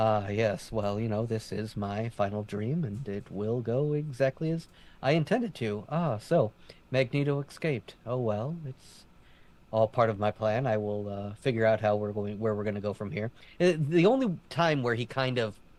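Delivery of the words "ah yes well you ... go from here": calm, cool, collected, unbothered villain voice. Imitating the character's manner of speaking: imitating calm, collected Bastion. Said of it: "that very calm, cool, and collected way of speaking".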